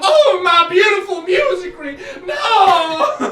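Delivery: very high, very loud, shrill, drawn-out distressed wail. Voicing a painted man as flames crawl up the painting, wailing in distress. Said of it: "he's like".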